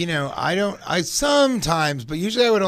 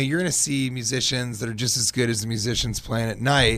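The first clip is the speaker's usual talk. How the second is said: plain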